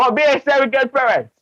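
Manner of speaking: giggling through words, very high-pitched. Speaker apologizes for laughing partway through, laughing while talking. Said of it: "I'm sorry that I'm laughing".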